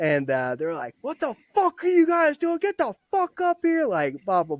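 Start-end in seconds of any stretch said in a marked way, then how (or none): 1.0-3.9 acted shrill very high angry drill-sergeant yell. Retelling being yelled at in the formation area: imitating drill sergeants yelling. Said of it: "now I'm getting yelled at".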